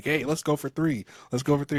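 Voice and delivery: put-on cocky boastful tone. Retelling how people celebrate the championship: imitating cocky fans. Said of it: "a lot of people here are just really cocky".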